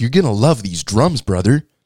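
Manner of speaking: put-on strong, hard, round, very American accent. Retelling what a man said to him about the drums: hard, round American accent. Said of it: "he had like a really hard, round American accent".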